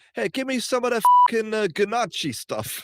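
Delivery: very high-pitched, put-on New Jersey guy accent. Imagining what some guy in New Jersey would say: New Jersey guy voice. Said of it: "if we went to New Jersey, there's, like, some guy going".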